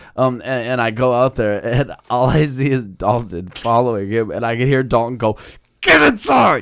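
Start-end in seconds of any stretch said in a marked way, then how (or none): 5.9-6.7 put-on furious scolding, very high, loud, angry yelling. Retelling how Dalton chased someone in a parking lot: imitating someone yelling angrily. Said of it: "fucking mad".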